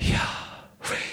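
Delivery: hushed, breathy whisper, like an exhale. Showing how the holy name would be pronounced, breathy Yahweh. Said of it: "it would be more like taking a breath".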